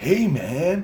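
put-on drawn-out, high stoner voice. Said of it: "He actually sounded like he reminded me of [name], [name] from [name] and [name]. ... He actually sounded like that".

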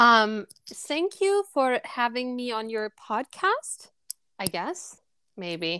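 bad, put-on German accent attempt. A podcast guest, asked to produce a German accent, thanks the host in a German accent. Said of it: "I can produce one if you want me to".

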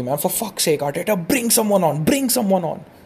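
fed-up, exasperated shouting. Watching the match, urging arteta to make a substitution; retelling shouting at the tv. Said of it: "I'm shouting at the TV".

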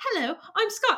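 quiet, mild, softly spoken, no fuss. Retelling how another performer sounded in the role: imitating quiet Scott voice. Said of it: "You were very quiet the whole time".

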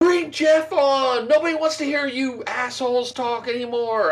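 shrill, high-pitched yelling. Host recalls a lady yelling at him the other day while he was out, imitating a woman yelling. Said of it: "this lady was yelling at me".

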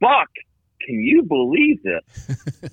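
loud calling yell, slow and swooping. Retelling a phone call, showing how a shouted remark sounds: retelling own yell. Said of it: "I yell out".

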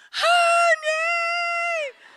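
very high, drawn-out, shrill top-of-the-lungs scream. Retelling a scare in a rolling van: retelling a scream at the top of lungs. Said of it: "I'm screaming at the top of my lungs".

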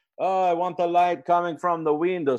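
put-on Eastern European accent, high-pitched and loud. Quoting a dp walking into a room, in an eastern european accent. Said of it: "sorry it's an eastern european accent".

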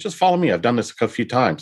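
ordinary delivery

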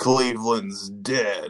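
put-on deep, raspy bad-guy voice. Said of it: "that is a real deep, raspy voice you got there".

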